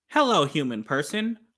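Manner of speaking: stiff, stilted fake voice. Mocking a man talking directly into the camera: stilted fake camera voice. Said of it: "fake voice, his normal person voice".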